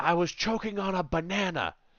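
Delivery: mock shrill, very high, frantic screaming. Retelling what a woman screamed after being told excuse me, retelling a scream. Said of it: "She turns at me and screams".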